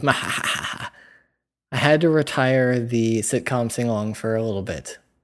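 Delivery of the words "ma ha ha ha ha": gloating evil cartoon villain cackle. Rubbing hands with excitement, like a cartoon villain: cartoon villain laugh. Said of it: "like one of those cartoon villains".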